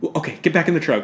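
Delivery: put-on casual tone. Retelling a scene to another speaker: imitating a nonchalant tone.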